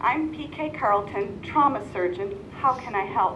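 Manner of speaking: ordinary delivery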